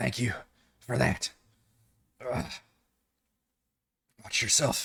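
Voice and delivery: badly hurt voice, rushed words. A game master voices a badly injured woman speaking to a player's character, badly injured. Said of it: "she's b- badly injured still".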